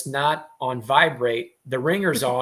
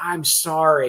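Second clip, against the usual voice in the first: put-on very quiet mouthing, near-silent whisper; 3 semitones higher than usual. Retelling a late arrival's apology to the speaker on stage: imitating mouthing words very quietly. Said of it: "I just mouthed very quietly".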